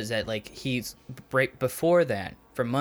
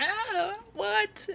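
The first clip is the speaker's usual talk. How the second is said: mock girlish screaming, higher. Retelling how a shot man reacted: imitating someone screaming like a girl. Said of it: "immediately started screaming like a girl".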